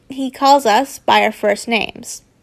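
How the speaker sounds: ordinary delivery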